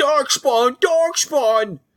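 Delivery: high-pitched panicked screaming.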